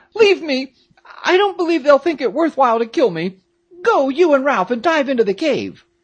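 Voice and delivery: crying out, very high. Peterkin, addressing his friend Jack, crying out. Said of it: "cried Peterkin, turning pale".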